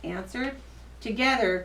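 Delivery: ordinary delivery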